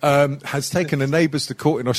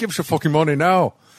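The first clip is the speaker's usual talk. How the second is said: put-on rapid, best-effort Scottish accent. Mimicking chat group members asking for money, in an attempted Scottish accent. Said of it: "That's my best Scottish".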